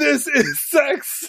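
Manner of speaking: acted, shrill, high, full-throated scream at top volume. Retelling a scene, acting out Worf's answer: imitating Worf's scream. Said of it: "at the top of his voice".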